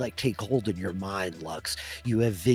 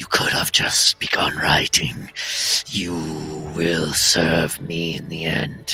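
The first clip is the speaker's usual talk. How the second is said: menacing stage whisper in a creature voice; 4 semitones lower, 8 dB louder than usual. Voicing a creature hovering among three characters: creature whispering.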